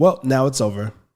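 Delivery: put-on reluctant, dismissive brush-off tone. Retelling her reply when asked about the split: imitating Mandy, not wanting to talk. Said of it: "just kinda said it like that, to where you could tell she didn't wanna talk about it".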